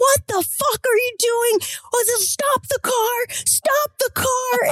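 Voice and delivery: put-on very high, all-out top-of-lungs scream. Retelling a man screaming behind the speaker's car, retelling screaming at top of lungs. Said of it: "screaming at the top of his lungs".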